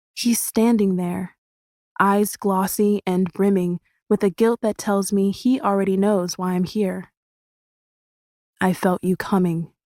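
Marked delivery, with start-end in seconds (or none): 8.6-9.6 weak, feeble, faint whisper. Narrator reads a guilt-stricken man greeting the arriving speaker, in a weak whisper. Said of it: "he whispers, voice weak".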